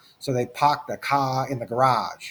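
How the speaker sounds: non-rhotic Boston accent, R dropped in park, car. Explaining Irish influence on English, speaker demos a Boston accent, dropped R. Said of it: "there's a Boston accent. People talk like this, like they've deserted the, the letter R".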